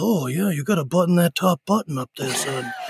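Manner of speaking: dramatic movie-trailer announcer voice. Recalling a high school headmaster, the speaker imitates his movie-trailer announcer voice. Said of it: "he should do movie trailers".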